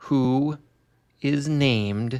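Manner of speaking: slow, deliberately stretched-out, drawn-out words. Naming a film's main character while clicking back to a page, speaking slowly. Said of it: "I'm speaking slowly".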